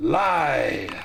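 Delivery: eerie ghostly ethereal crying out. A game master voicing a ghost that accuses a player: ghostly cry. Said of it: "it cries".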